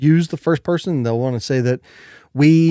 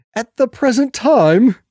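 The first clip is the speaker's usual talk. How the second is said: high, put-on, overly proper old English accent; 8 semitones higher, 3 dB louder than usual. Explaining wordy phrases versus short ones, saying one in a mocking old english accent. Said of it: "I say them in this kind of mocking old English style accent".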